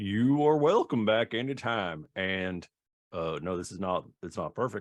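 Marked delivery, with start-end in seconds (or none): 0.0-2.0 loud, high, put-on bear character voice. Voicing a bear who welcomes the party back: bear NPC voice. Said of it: "His voice was a little like this".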